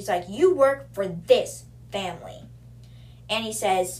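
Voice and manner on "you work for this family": put-on angry character voice, louder. Reading a scene aloud, acting out Zara confronting the guard: acting Zara angry. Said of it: "she's mad".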